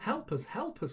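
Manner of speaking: very high-pitched, desperate, pleading cry. Animals trapped in hunters' cages call out to a mouse; desperate cry. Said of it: "cried the animals desperately".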